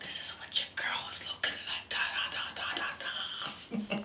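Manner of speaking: whispered softly.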